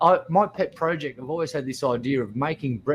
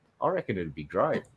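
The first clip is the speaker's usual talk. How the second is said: usual speaking voice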